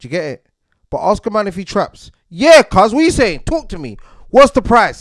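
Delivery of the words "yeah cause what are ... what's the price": brazen, shameless, brash, very loud, pitched up. Acting out a man asked if he traps, imitating a loud, brazen man. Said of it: "See how loud and brazen he is".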